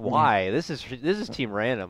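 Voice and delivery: normal talking voice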